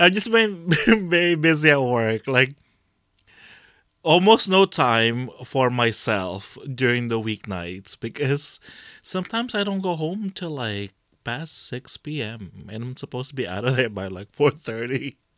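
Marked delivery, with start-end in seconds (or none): 0.0-2.3 talking through laughter, higher and louder.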